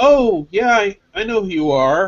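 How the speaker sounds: slow, put-on, unwelcoming, put-out why-bother tone. Retelling a phone call answered by Cosmo: imitating a 'why are you talking to me' tone. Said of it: "he's got this tone in his voice, like, "Why are you talking to me?"".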